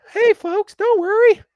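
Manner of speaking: very high, loud squeaky voice. Imagining Mickey Mouse consoling after a loss: Mickey Mouse impression. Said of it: "That was a good impression".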